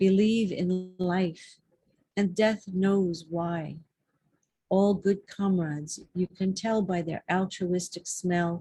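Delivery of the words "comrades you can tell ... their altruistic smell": ordinary delivery, nothing marked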